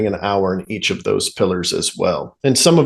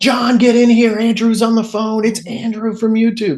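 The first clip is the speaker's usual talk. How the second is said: put-on, very high-pitched shrieking scream; 13 semitones higher than usual. Retelling how a caller reacts on the phone: imitating a woman screaming. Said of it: "screaming, like".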